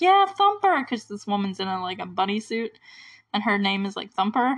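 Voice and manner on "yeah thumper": shrill, very high-pitched cheering. Retelling a scene where a woman cheers on a wrestler: imitating someone cheering. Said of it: "cheering for her".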